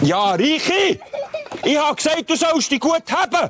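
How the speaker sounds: high-pitched scolding shout.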